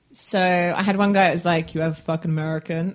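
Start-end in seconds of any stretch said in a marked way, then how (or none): 1.7-2.9 put-on New York accent, quieter and faster. Retelling what a guy in New York said to you: imitating a New York guy's accent. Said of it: "That's a really good accent".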